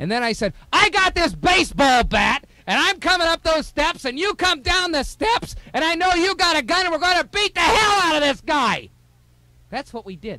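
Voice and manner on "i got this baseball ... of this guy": very high-pitched, loud yelling. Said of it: "yelling and screaming from one floor to the other".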